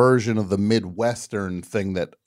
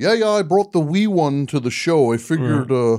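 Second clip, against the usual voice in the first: put-on Canadian accent, higher; 6 semitones higher, 3 dB louder than usual. Retelling a father talking at a Toronto concert: Canadian accent. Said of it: "the Canadian thing is very interesting".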